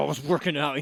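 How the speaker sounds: put-on combative, confrontational, aggressive, hostile tone. Repeating another speaker's excuse back: imitating someone aggressive. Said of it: "He's so aggressive".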